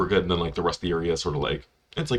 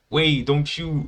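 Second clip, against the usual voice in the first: put-on slight Canadian accent, pitched up; 9 semitones higher than usual. Describing a game scene, quoting Steve in his little Canadian accent. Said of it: "in his little Canadian accent".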